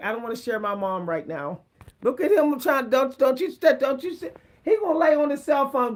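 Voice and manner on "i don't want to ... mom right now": plain, just-talking cat inner voice. Voicing what the cat Hansi is thinking as he looks on: voicing the cat's thoughts. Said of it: "He's like".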